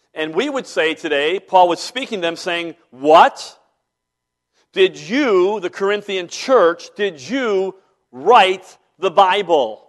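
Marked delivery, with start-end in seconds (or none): 2.9-9.7 play-acted incredulous, loud, sarcastic delivery. Retelling the apostle Paul's retort to the Corinthian church: imitating sarcastic Paul. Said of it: "We're about to experience sarcasm".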